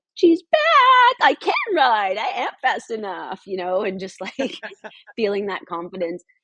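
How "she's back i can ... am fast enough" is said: mock excited yell, higher, louder, slower. Telling how she zoomed in after a fast ride and yelled to a coach, retelling an excited yell. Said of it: "start yelling at one of the other coaches".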